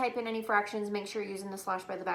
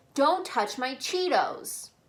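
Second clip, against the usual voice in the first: cross, angry reading; 4 semitones higher, 4 dB louder than usual. Explaining a punctuation assignment, the speaker demonstrates the sentence in an angry voice. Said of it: "So you would say it in like an angry voice".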